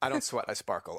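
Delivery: run straight through in one go, without a break. Worried about remembering a saying, the speaker gets it out said fast. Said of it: "So I'm gonna say it fast".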